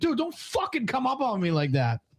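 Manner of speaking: play-acted furious shriek, very high with swooping pitch. Retelling what a player said to another in a round of Arc Raiders, imitating someone screaming. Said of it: "he screamed at him like".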